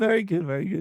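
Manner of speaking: put-on high old English man voice. Reacting to the story just told, in an old English man voice. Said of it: "Why did you sound like an old English man?".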